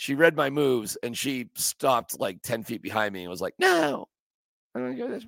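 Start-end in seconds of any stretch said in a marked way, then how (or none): 3.6-5.3 terrible, very high, creaky, rough put-on voice. Telling how the wife stopped ten feet behind and refused, in a terrible impression of his wife. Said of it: "terrible, terrible impression of my wife".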